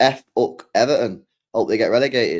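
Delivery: ordinary talk, nothing marked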